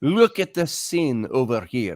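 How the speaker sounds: put-on Scottish accent, "look" said with an ee. Quoting how a man talks about a battle site, imitating a Scottish accent. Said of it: "he'll say".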